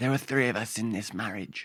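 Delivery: very quiet, hushed, barely-there soft voice. Quoting a famous line while comparing voices: Princess Diana impression. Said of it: "a little bit Princess Diana".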